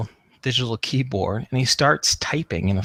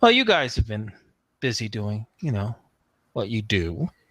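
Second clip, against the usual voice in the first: prim, stuck-up, condescending little snooty voice; 3 dB quieter than usual. Speaker retells August spinning in his chair to address the group, imitating August's snooty voice. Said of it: "he says in this little snooty voice".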